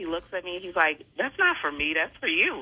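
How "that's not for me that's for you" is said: serious, plain, unjoking, matter-of-fact acted delivery. Retelling a partner's reply to a surprise trip plan: imitating a straight-faced reply. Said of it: "Straight face".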